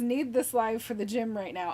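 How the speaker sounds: usual speaking voice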